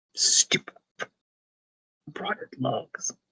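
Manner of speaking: whispered, grumbling mutter under the breath. Playing a character back empty-handed, kicking the ground: grumbling in character. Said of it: "Just kinda grumbling".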